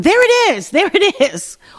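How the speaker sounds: high, mocking, put-on yell.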